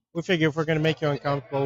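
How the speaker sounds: plain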